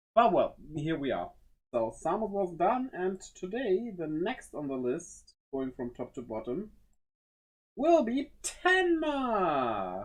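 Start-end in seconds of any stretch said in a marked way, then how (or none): 7.8-10.1 high, slow, drawn-out excited voice. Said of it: "I sound so excited".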